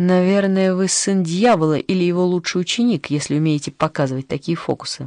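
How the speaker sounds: plain reading voice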